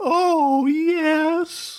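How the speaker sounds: "yes" very high and dragged out. Quote your favorite WWF manager to someone who enjoys Halloween, in a high-pitched Paul Bearer impression. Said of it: "I try to do my best Paul Bearer impression".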